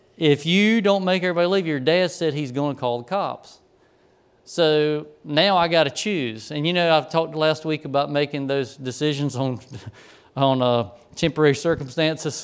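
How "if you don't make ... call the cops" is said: ordinary talk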